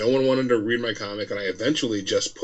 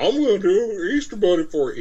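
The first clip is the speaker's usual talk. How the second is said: put-on Kentucky accent, pitched higher; 10 semitones higher, 4 dB louder than usual. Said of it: "that's my Kurt Belcher voice".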